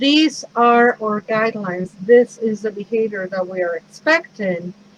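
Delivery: normal talking voice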